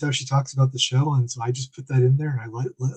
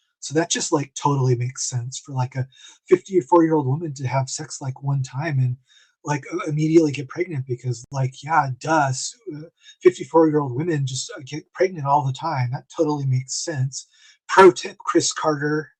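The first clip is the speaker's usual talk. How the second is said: ordinary talk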